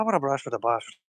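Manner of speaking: amateur put-on Irish brogue, trying hard. Rereading the viewer's message, trying a different accent: attempted Irish accent. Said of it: "I don't know if that's actually a good Irish accent".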